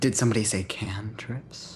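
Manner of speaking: creepy, eerie voice. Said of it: "It's a creepy Candlemere voice".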